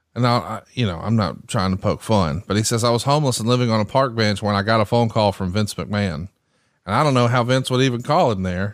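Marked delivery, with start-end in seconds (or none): none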